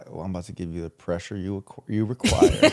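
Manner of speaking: put-on sexy, seductive talking voice. Joking about a phrase a co-speaker just used, saying it in mock-sexy talk. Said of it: "Imagine like sexy talking like that".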